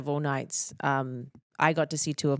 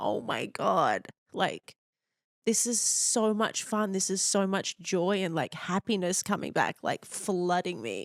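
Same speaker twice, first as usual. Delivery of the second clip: tearful, emotional gush on the edge of tears; 5 semitones higher than usual. Remembering her first win, near tears. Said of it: "why am I crying?".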